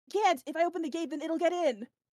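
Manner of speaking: terrified, scared yelling shout. Game narrator voices the owl at the gate answering Minty, Stevie shouting. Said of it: "and he just shouts like".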